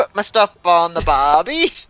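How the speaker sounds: Australian accent impression. Retelling how a man ordered at a steakhouse, imitating an Australian accent. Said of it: "He talked in an accent the whole time too".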